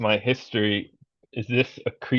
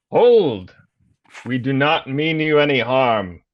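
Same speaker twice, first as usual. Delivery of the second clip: loud, raised, shouted call-out, in character; 3 semitones higher, 5 dB louder than usual. Calling out to a creature in a game: shouting in character. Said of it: "so I shout out".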